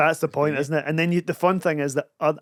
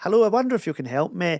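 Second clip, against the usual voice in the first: prim, proper, put-on phone voice of an older woman; 3 semitones higher than usual. Describing an older woman answering the phone, the speaker imitates her phone voice. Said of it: "phone voice".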